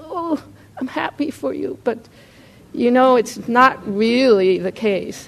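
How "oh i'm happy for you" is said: faint, thin, high, barely-there voice. Showing how someone forces out congratulations on another's new job, thin barely-there voice. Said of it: "this little thread of voice comes out that barely says".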